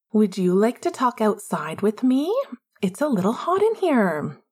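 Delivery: icy, chilling, falsely cheerful, fake-chipper sing-song voice. The narrator reads one character inviting another outside, chilling but faux chipper. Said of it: "in an equally chilling but faux chipper voice".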